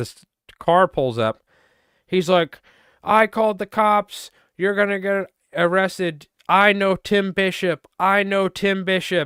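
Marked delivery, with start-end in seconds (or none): 3.0-9.3 high-pitched, hollered, worked-up ranting. Recounting a man who pulled up in a car, retelling a man's yelling. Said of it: "this fucking guy's yelling at us".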